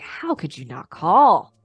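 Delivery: mock compassionate, authoritative, caring but firm, swooping tone. Recounting how a man laid into a woman, retelling compassionate, authoritative questioning. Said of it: "compassionately and authoritatively with questions like".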